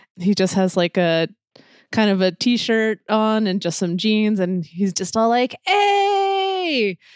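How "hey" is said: overexcited superfan voice, higher. Voicing a starstruck fan meeting his hero: super excited fan. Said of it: "super excited".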